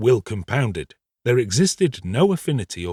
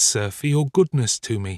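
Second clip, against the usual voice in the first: ordinary delivery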